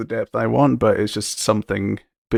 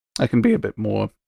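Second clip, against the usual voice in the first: voice breaking. Speaker talking through plans for a design sheet: voice cracking. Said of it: "Excuse the voice crack there".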